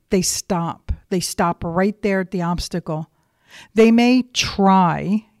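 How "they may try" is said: heavy stress punched on try. Speaking about trying to overcome an obstacle: stress on try. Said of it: "you hear me emphasize that word".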